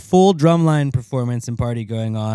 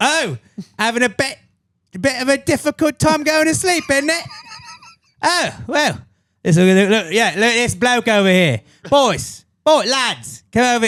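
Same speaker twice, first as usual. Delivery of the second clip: very high-pitched, put-on British bloke voice; 12 semitones higher than usual. Describing a meme where your sleep demon is a British guy, in a British guy voice. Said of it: "your sleep demon is a British guy".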